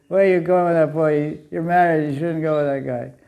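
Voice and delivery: ordinary talk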